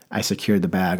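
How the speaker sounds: ordinary delivery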